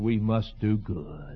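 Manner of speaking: put-on slow, pious, preachy sermon tone. Mimicking a preacher with a perpetual smile: ministerial preacher voice. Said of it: "in his ministerial voice".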